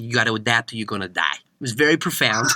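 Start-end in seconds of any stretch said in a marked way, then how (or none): 0.0-1.3 put-on thick, heavy, low New York accent. Quoting what a man once told him, in a thick New York accent. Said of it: "he said it in that thick New York accent".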